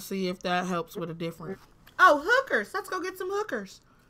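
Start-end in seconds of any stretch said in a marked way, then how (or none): 2.0-3.8 put-on, pitched-up young girl voice.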